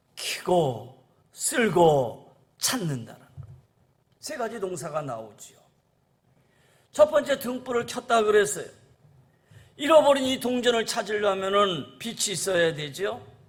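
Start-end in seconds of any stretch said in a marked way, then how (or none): 0.2-3.3 켜고 쓸고 찾는다 slow, low, each verb weighed. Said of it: "세 가지 동사를 우리가 주의 깊게 봐야 돼요".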